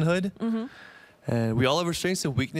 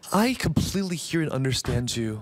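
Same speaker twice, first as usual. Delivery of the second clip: robotic AI assistant voice with programmed-sounding sympathy. Acting out how the voice ai chat replies when you say you're sad, imitating an ai chat voice. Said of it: "They reply in the very AI tone".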